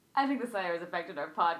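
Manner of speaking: fast, offhand, nonchalant delivery.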